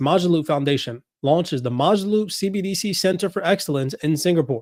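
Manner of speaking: ordinary talk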